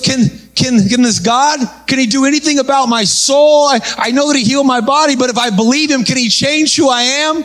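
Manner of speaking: put-on tearful crying. Retelling how a man spoke after his back pain left: imitating someone crying. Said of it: "And he starts crying".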